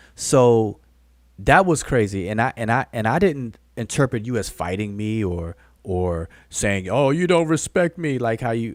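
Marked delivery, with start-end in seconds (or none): 6.9-8.2 mock, high, whiny, tearful whimpering. Answering someone's accusations, imitating them: mock crying imitation. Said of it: "sound like you crying right there".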